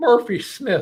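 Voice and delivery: put-on Irish accent, high-pitched and loud. Announcing a half marathon winner's name, in a put-on Irish accent. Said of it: "I'm trying to do my best Irish accent for this".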